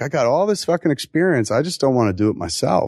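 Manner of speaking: ordinary talk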